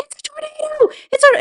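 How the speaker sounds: put-on very high shriek at the top of the lungs. Recounting a movie scene where she yells about a tornado: retelling a scream. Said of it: "she's screaming at the top of her lungs".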